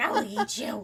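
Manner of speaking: very high, menacing, threatening hen voice. Voicing the attacking mother hen: voicing a menacing hen. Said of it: "She's like".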